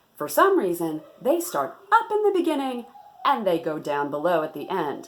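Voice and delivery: news reporter voice with swooping pitch. Speaker demonstrating the news reporter voice they just described, news reporter voice. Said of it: "Let me demonstrate the news reporter voice".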